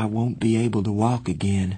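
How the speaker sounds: ordinary delivery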